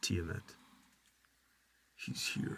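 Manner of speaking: murmuring under the breath. Speaking in Draconic as a character: murmuring under breath. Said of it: "I murmur under my breath".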